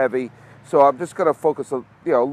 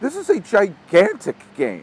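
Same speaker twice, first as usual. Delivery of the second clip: voice cracking up high partway through; 6 semitones higher than usual. Speaker introducing the Toronto-Texas game, with his voice cracking. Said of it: "my voice just broke right there".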